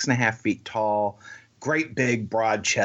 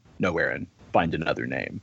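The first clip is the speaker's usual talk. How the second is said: very low, great big deep voice; 7 semitones lower than usual. Retelling how a man answered a proposed nickname, doing his big deep voice. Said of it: "he's got this great big deep voice".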